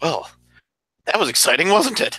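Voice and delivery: out of breath, huffing. Voicing a character getting up after a dragon fight: panting in character. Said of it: "I'm kind of panting".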